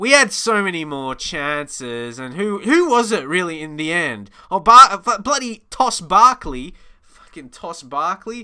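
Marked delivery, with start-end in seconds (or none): 5.2-8.4 angry, fed-up, frustrated swearing. Looking back at a game and blaming a player: mad and frustrated. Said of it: "I'm mad and frustrated".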